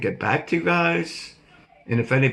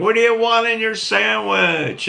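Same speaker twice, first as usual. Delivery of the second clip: screaming, pitched very high; 10 semitones higher, 5 dB louder than usual. An old man recounts coming out to a young girl in a car; retelling his own scream. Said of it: "and I'm screaming".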